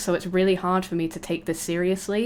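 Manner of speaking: usual speaking voice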